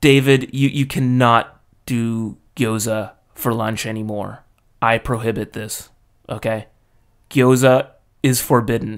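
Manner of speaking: totally straight, serious, flat deadpan monotone. Retelling the manager banning gyoza for lunch: imitating the manager's deadpan seriousness. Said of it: "totally straight, serious stone face".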